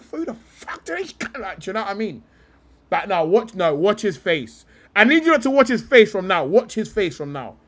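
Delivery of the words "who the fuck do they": high, soft muttering under the breath. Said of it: "he's go".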